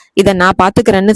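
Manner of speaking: normal talking voice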